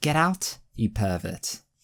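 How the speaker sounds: put-on Welsh woman's accent. Repeating a woman's line to a man in the ladies' changing room, Welsh accent. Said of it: "I'm great at accents anyway".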